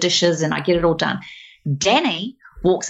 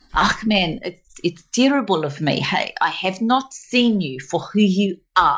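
slow, put-on South African accent. Asked to keep going, retelling what a woman said, in a South African accent. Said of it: "keep going with the South African accent".

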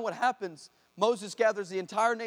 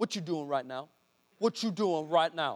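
suspicious, distrustful tone; 4 semitones lower than usual. Speaker recalling friends' moms calling them, imitating a suspicious mom. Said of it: "Like they were doing something illegal".

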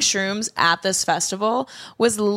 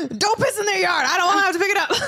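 very high-pitched, loud scolding yell; 10 semitones higher than usual. Retelling calling a drunk friend over like a dog: imitating own yelling like at a dog. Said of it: "yelling at her like she's a dog".

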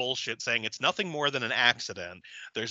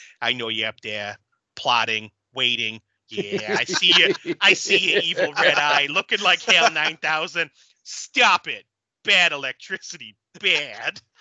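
big, loud, animated cartoon-character voice; 3 semitones higher, 5 dB louder than usual. Retelling a scene from a show in a Peter Griffin voice. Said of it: "I heard this in Peter Griffin's voice".

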